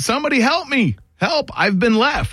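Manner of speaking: very high, screamed cry. Telling about someone left behind as the boat left: retelling a scream for help. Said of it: "he's screaming like".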